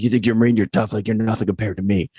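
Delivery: put-on fast, rattled-off New Jersey accent. Speaker recalling a Navy captain who challenged him; Joseph Hebert's Jersey accent. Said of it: "He had the Jersey accent".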